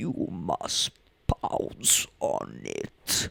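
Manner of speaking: very slow, eerie, creepy whispered voice. Quoting a line often repeated in class, in the Nosferatu voice. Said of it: "just in the Nosferatu voice".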